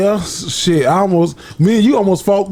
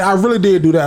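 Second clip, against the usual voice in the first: ordinary talk, nothing marked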